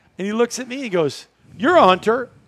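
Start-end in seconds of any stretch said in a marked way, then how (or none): 1.6-2.3 put-on, very loud, booming declaiming voice. Retelling what a travel companion said in a crowd: imitating someone saying it loud. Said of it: "Real loud".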